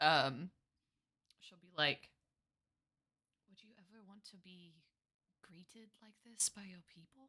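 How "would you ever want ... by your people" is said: very soft, barely audible whisper. Voicing a character who drops back to speak to a companion: very low whisper. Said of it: "in a very low whisper".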